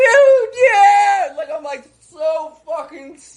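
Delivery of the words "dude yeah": ecstatic, very shrill, very high, loud excited scream. Speaker recounts driving past the hotel he once stayed at: reenacting screaming in the car. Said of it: "I'm screaming in the car".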